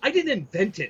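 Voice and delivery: heated, high, fed-up yell. Retelling a work argument, imitating himself yelling. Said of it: "I finally yelled at him".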